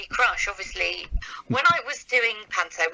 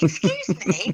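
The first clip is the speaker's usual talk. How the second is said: put-on high, slow, indignant old lady squeak. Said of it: "she was like".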